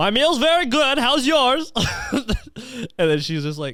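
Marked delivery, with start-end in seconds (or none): 0.0-1.7 put-on Eastern European accent, pitched high. Getting nervous on a dinner date with a woman; Borat voice. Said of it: "Was that Borat?".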